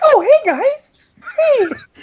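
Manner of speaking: very high, slow, tiny, squeaky mouse voice. Imitating the other speaker as if tiny like a mouse: tiny mouse Jonathan Holmes voice. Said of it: "If you were tiny, you'd be the cutest. You'd be like".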